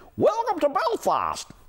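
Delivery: strange little gnomey voice, very high. Retelling how a small woman hugged and greeted him: strange little gnome-like voice. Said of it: "such a strange little dwarfy, gnomey kind of voice".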